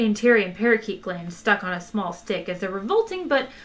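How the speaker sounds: ordinary delivery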